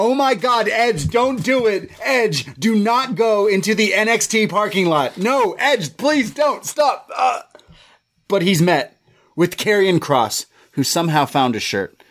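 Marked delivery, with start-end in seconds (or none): 0.0-7.1 frantic, high-pitched, begging, pleading yell. Retelling screaming at the tv during a show: imitating own screaming at tv. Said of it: "I screamed at my T V".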